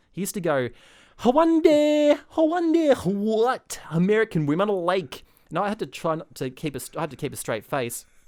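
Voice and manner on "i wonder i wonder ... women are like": put-on hammed-up thick Scottish accent, very high and loud. Retelling a fellow actor's line from a Scottish musical: thick Scottish accent. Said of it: "That was not bad".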